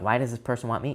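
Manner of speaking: ordinary talk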